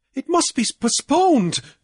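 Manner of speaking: in desperation. Cornelius answers men demanding their money at the bank, desperate. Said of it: "Cornelius said desperately".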